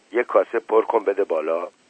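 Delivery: plain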